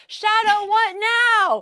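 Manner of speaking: frantic, high-pitched, panicked scream. Recalling figuring out the setup alone while live, retelling a scream for help. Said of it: "screaming like".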